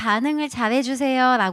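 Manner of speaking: ordinary talk, nothing marked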